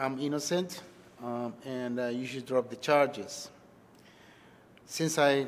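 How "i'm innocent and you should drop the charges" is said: usual speaking voice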